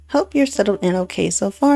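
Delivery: ordinary delivery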